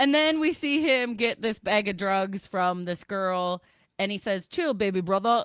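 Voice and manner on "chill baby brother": terrible, fake put-on English accent. Recapping a tv episode and quoting a character, in a terrible english accent. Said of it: "that's a terrible English accent".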